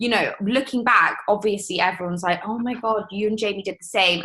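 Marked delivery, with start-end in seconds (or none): none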